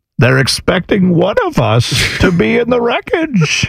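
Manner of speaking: slow, drawn-out villain voice swinging up and down. Quoting the villain's line from the plane scene: Bane voice. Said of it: "What is the thing he says where he's like".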